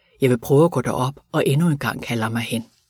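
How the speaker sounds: ordinary delivery, nothing marked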